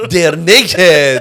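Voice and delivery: put-on Iranian accent, shouted loudly. Repeating the other speaker's explanation of a TV show: mock shout in Iranian accent. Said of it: "The Iranian accent like shouted out".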